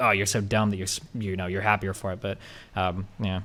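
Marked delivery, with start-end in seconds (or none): none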